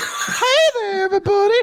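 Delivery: very high, creepy leering voice. Imagining a character greeting everyone at the office in a creepy way. Creepy leering voice. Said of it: "we got Casey Kasem's son over there".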